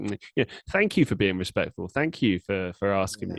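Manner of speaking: heavily sarcastic, fake-polite tone. Retelling how someone thanked a fan who filmed him: imitating a sarcastic remark. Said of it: "he sort of sarcastically says".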